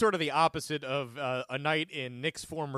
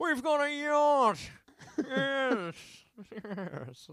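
snooty English voice, very high and drawn out slowly; 10 semitones higher than usual. Talking about a man's Robin Leach bit, speaker does that uppity English voice. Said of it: "that English voice that sounded uppity".

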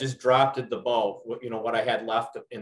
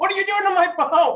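very high, shrill, loud screaming outburst; 9 dB louder than usual. Retelling how a customer burst through the door: imitating a customer screaming. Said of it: "The guy opens the door screaming".

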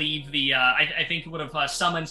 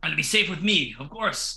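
put-on offended dwarf voice. Voicing a dwarf guard who looks offended at a threat: offended dwarf guard voice. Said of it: "He looks offended. He's like".

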